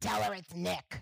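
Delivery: creaky, rough, gravelly man's voice. Recreating the voice heard in my ear at the table: Nick's gravelly voice. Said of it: "I hear this in exactly this voice. ... This guy had a gravelly voice".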